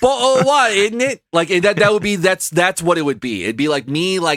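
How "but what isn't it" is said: put-on British accent, higher pitch. Joking about waking up after a head injury: british accent.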